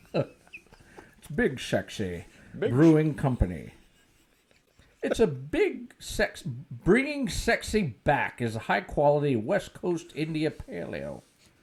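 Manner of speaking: bad Scottish accent with swooping pitch. Reading a beer label aloud in Sean Connery's voice; Sean Connery impression. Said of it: "do my best to get Sean Connery".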